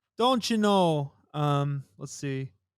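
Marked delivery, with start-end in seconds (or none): 0.2-1.2 put-on Canadian accent, pitched up. Asked to do a Canadian accent, attempted Canadian accent. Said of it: "Can you can you do a Canadian accent?".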